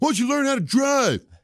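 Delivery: very high, rude shouted jab. Speaker retells a driver yelling at him in a parking lot, retelling a yell. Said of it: "he yells out something, and, and it was the tone of voice".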